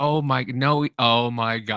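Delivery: mock, very slow, giggling, disbelieving delivery. Retelling what she said on seeing the video: imitating someone laughing while talking. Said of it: "you just hear her laughing".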